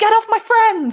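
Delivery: very high, loud, yelled scream. Voicing a character in a fight, character screaming. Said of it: "She just screams".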